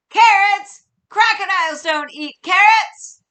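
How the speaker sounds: crabby crocodile voice, very loud and very high. Leading listeners to yell along with the angry crocodile: angry crocodile yelling. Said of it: "he's angry and yelling. Ready? Say it with me, or yell it with me".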